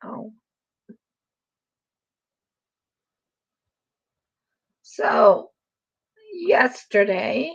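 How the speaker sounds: croaky, hoarse voice. Starting to tell another speaker about yesterday: croaky voice. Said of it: "Your voice is getting croaky".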